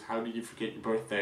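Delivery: ordinary talk, nothing marked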